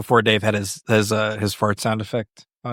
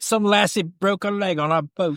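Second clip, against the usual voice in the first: bad, fake Australian accent, pitched higher; 9 semitones higher than usual. Retelling what a guy on a boat said, in a bad fake Australian accent. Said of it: "I don't know what accent that was".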